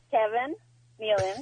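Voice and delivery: very slow, drawn-out delivery. Starting a list of names over for a game, speaking very slowly. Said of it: "Not that slow".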